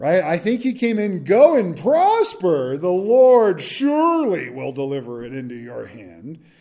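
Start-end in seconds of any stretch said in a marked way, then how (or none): 1.2-6.4 slow, swooping, honey-thick, put-on dripping sarcasm. Retelling a reply from a scripture scene, with acted dripping sarcasm. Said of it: "said this with sarcasm dripping from his lips like honey".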